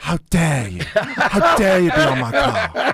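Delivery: slow stretched voice with big swoops. Asked to do an impression, performing it: Greta Thunberg impression. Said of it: "Let me hear it, the Greta Thunberg".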